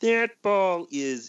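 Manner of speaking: half-hearted frog puppet impression. Calling a home run at a baseball game, do a half-assed Kermit the Frog impression. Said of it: "my really half-assed impression of Kermit the Frog".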